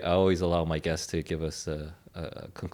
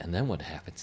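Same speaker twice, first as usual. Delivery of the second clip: hushed, quiet, near-whisper; 5 dB quieter than usual. Retelling how their dad half-whispers in their ear after a film, retelling a half-whisper. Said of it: "he whispers to my ear".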